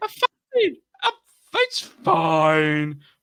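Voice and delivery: very slow, swooping sitcom delivery, fine stretched out. Joking after being told the last line sounded Friends-ish: Ross "I'm fine" impression. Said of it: "I love Ross when he does that".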